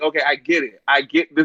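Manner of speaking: ordinary talk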